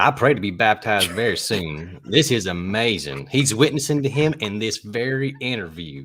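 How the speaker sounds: loud put-on Southern accent. Asked to show off a Southern accent, read the quote in a Southern accent. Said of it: "my Southern accent".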